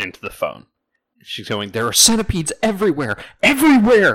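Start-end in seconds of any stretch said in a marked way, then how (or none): 1.7-4.1 high, loud panicked scream. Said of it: "She's immediately screaming".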